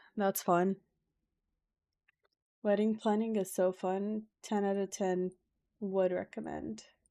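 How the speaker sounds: dry, sarcastic, insincere cheer. Talking about being busy with wedding planning: sarcastic. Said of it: "I'm being sarcastic".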